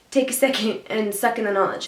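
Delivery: ordinary delivery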